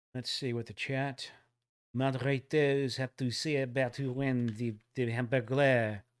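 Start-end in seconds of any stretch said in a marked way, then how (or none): 2.0-6.0 deliberately bad, fake French accent. Host asking the chat moderators who won the Hamburglar prize, in a horrible French accent. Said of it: "That was a horrible French accent".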